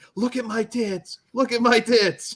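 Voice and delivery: mock, shrill, very high, campy screaming. Retelling a movie scene where a character screams: imitating someone screaming. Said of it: "she's just screaming".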